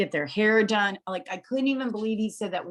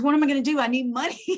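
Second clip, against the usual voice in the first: put-on upset, high, close to crying; 5 semitones higher than usual. Retelling the son's reaction to the news: imitating son almost crying. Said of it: "he was literally almost crying".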